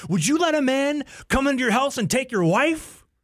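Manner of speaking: put-on, shrill, very high, furious screaming. Retelling a man screaming at a silent room: retelling furious screaming. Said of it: "as he's like screaming".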